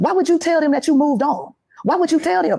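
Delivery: put-on, high-pitched screaming at the top of lungs. Retelling a caller's accusations during a live stream: imitating someone screaming at top of lungs. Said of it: "she's screaming at the top of her lungs".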